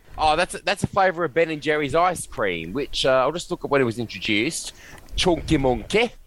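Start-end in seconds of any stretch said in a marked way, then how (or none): 5.2-6.1 put-on Midlands Northern English accent. Looking something up, saying the name in a Midlands Northern English accent. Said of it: "I'm trying to do my best, Midlands Northern English accent".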